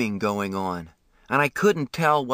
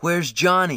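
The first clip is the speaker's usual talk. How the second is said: frightened, scared cry; 4 semitones higher than usual. A kid wakes in an ambulance beside a stranger, with a frightened cry. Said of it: "I cried, frightened at being in this car".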